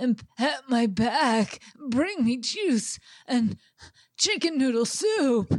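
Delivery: put-on elderly old man voice. Acting out what a man demands, in an old man voice. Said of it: "does he talk like an old man in Harry Potter?".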